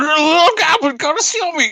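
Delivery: put-on drunken slurring. Voicing a drunk character whose words are slurring: slurred drunken speech. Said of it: "his words are slurring".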